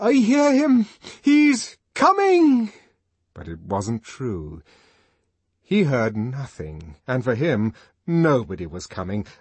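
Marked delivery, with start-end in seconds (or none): 0.0-2.7 very high, drawn-out, jumping-up yell. A man jumps up, feeling he must do something, shouting. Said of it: "jumped up and shouted".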